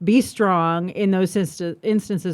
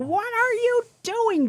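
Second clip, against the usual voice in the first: yelling, higher pitch; 4 dB quieter than usual. Retelling how someone yells at the screen during a game: imitating Chris yelling at the screen. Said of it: "he's yelling at the screen".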